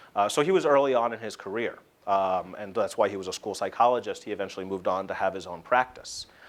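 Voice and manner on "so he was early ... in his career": plain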